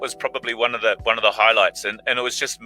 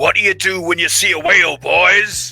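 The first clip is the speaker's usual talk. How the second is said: big, loud, booming put-on voice; 7 semitones higher, 6 dB louder than usual. Act out the man who walks onto a hushed set and speaks to everybody, imitating a big voice. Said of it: "he just goes in this big voice".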